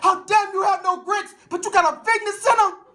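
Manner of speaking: acted belligerent yell. Retelling a protest at the Hampton Inn, retelling a belligerent yell. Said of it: "In a belligerent voice, I yelled".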